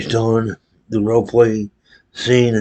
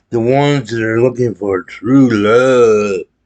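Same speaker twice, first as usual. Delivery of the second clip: scoffing, sarcastic, mocking, with "love" drawn out; 3 dB louder than usual. Introducing the next personality type on the list, in a mocking tone. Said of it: "I say it in a mocking tone".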